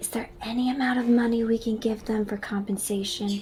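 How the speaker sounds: whispering. Adina whispers into her dad's ear during the scene: whispering. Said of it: "Adina will whisper into her dad's ear".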